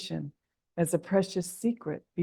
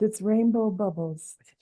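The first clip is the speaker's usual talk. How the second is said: in a whisper; 2 semitones higher than usual. Repeating lines after a leader as instructed: whispering. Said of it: "Now in a whisper".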